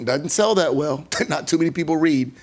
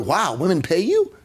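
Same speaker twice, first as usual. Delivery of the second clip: put-on naive, slow, foolish little-boy exclamation full of wonder. Retelling own words to a boy at fifteen: retelling a foolish boyish exclamation. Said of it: "I exclaimed like a foolish little boy".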